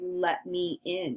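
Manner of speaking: ordinary delivery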